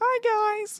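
very high-pitched, put-on woman's voice. Cast as Mary in a role-play, greeting the group in a lady voice. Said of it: "Just do a lady voice".

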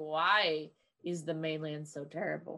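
low, fed-up, exasperated, sarcastic tone. A character looks over at the others and asks, exasperated and sarcastic. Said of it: "in an exasperated, sarcastical manner".

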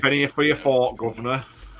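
put-on Cockney accent. Imitating everyone on Victorian streets: Cockney accent. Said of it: "Everybody's Cockney".

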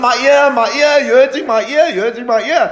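very high, repeated screaming. Retelling how a man screamed while pulled by the ear: imitating someone screaming. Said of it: "this guy starts screaming".

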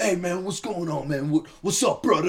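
easygoing, casual buddy-buddy dude talk. Retelling how the WRA boys greeted him at the pool: imitating a WRA boy's greeting. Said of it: "And they're".

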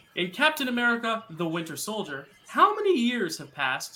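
voice cracking mid-phrase, jumping up high. Quiz host reads the next movie trivia question to contestants, voice cracking. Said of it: "voice crack".

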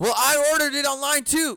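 high, shrill screaming with a complaining tone. Speaker retells a customer yelling at the pizza counter, imitating a man screaming. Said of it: "And he just keeps on screaming".

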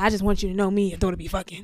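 put-on voice of an older-sounding man. Retelling what a drunk partner told the mother: imitating how he talked. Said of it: "That's how he talked? 'Cause you made it sound like he was, like, thirty".

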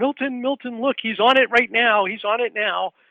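piercing, very high, loud, excited screaming. Retelling how his mother reacted when he came home: imitating mother screaming. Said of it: "she starts screaming".

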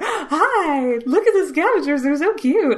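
put-on gushing, high, excited puppy-dog baby talk. Recalling opening an issue and reacting, in a put-on excited puppy-dog voice. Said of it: "had like puppy dog voice".

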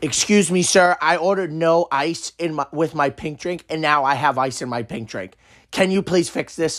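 freaking out, losing it, but polite. Retelling a kid complaining about ice in his drink: imitating a kid freaking out. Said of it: "freaking out about the fact that there was ice".

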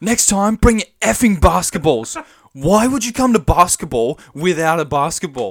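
furious, high, angry yelled shout. Retelling what Dylan shouted at the team after losing, imitating Dylan's angry shout. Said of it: "we just hear Dylan shout out. And he's so angry".

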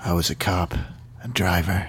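low, cool, mumbly voice. Acting out a scene, answering another character's question: cool mumbly Max voice. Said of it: "I'll do Max like in a cool mumbly voice".

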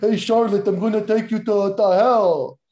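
hammy, stagey put-on theatrical villain voice. Acting out a taunt line, which comes out in a Dracula voice. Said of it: "you turned into a fucking Dracula there".

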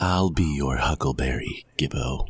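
low, put-on sultry, seductive voice. Teasing another player about a weapon drop: put-on seductive voice. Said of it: "Don't say it in that voice".

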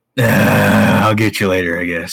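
put-on voice of a tired, drunk man. Imitating how the actor plays the role: Tim Curry as a tired drunk. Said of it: "He's playing him like a tired, drunk man".

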